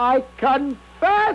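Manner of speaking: high, slow, terrified wail, near screaming. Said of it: "I was about to scream".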